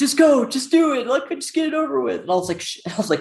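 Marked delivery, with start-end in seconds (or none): 0.0-2.2 shrieking, very high, shrill shout. Retelling an argument with her mom in front of the attorney; imitating mom yelling. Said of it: "she's yelling".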